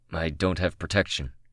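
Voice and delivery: plain reading voice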